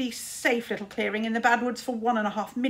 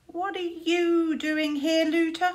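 stormy, suspicious, high voice; 6 semitones higher than usual. Finding a smug wizard has followed him, a character demands: storming suspiciously. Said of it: "stormed Tsar suspiciously".

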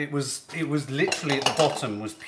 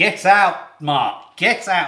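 put-on grandmother voice, louder; 2 semitones higher, 8 dB louder than usual. Retelling being shooed from the kitchen while trifle was made: imitating Nan shooing him out. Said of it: "She'd be like".

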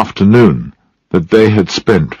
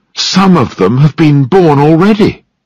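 eager, thrilled, excited, pitched-up voice; 7 semitones higher than usual. A man looking into a box of rats calls a woman over, excited. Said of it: "he said excitedly".

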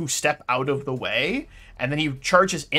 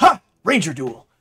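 thrilled, excited and louder; 7 dB louder than usual. Narrating a game, voicing Tim as he starts a ranger duel, overly excited Tim. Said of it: "he seems like overly excited about this".

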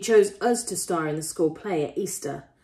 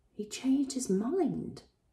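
gentle, soft-spoken, slightly high pitch; 6 semitones higher, 7 dB quieter than usual. An aunt repeats what she has just been told about Salem: said softly. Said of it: "she said softly".

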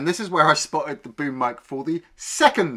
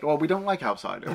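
ordinary talk, nothing marked

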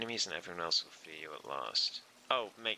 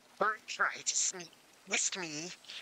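put-on high, silly monster creature voice; 10 semitones higher than usual. Voicing a character's dialogue aloud while playing, in a put-on creature voice. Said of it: "I'm so sorry for that voice".

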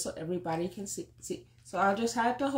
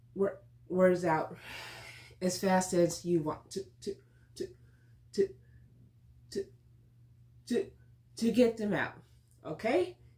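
stuttering, stammering speech; 2 semitones lower than usual. Introducing the book for today's reading: stuttering. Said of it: "my stuttering is a little wor-".

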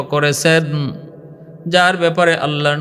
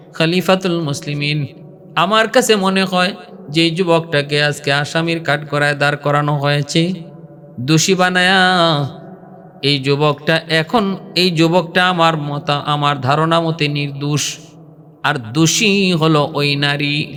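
plain

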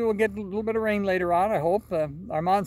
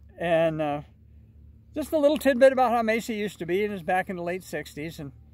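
ordinary talk

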